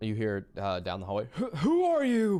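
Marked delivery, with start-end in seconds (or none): 1.3-2.4 put-on very high, very slow elderly old man voice. A voice calls from down the hallway at someone with a gun ready: old man voice. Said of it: "Sounds like an old man".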